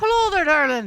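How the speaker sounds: put-on Irish accent. Voicing Seamus from the game, who is Irish: Irish accent as Seamus. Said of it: "nope, not doing that".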